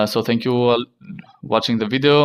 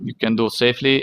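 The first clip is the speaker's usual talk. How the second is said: plain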